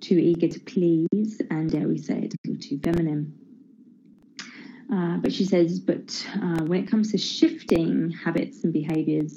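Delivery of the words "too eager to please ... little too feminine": ordinary talk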